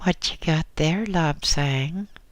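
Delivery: put-on thin, piping small-boy voice. Narrator reads a newly accepted small boy calling out to Lobsang, in a small piping voice. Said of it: "piped a small voice".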